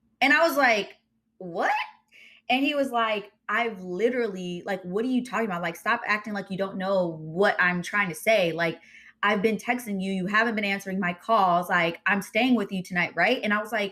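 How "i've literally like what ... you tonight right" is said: usual speaking voice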